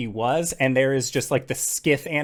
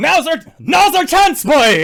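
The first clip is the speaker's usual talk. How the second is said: loud high-pitched shouting. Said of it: "and Elkhorn, like".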